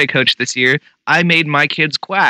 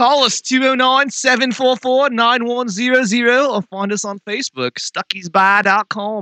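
put-on Australian accent, pitched higher; 8 semitones higher than usual. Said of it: "I gotta talk in that voice at work".

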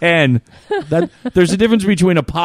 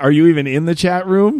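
plain

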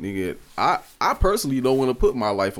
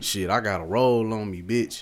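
imitated taunting, trash-talking voice. Retelling what a man said as a woman walked away: imitating someone talking trash.

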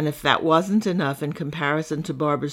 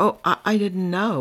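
embarrassed, flustered stammer, higher, slower; 4 semitones higher than usual. Narrator reads a woman learning the other woman is deaf, stuttering, embarrassed. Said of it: "Barbara stuttered, embarrassed".

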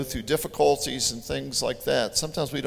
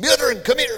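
loud, very high put-on Scottish accent; 11 semitones higher, 5 dB louder than usual. Recounting calling meadrin over with the kids, in a put-on scottish accent. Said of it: "we put on our Scottish accents".

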